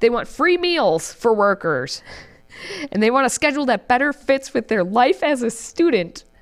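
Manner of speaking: holding back laughter, straight face nearly cracking. Reading out the workers' list of demands, while holding back a laugh. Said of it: "keep a straight face while I'm trying to read this".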